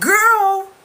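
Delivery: very high, loud, overjoyed laughing shriek.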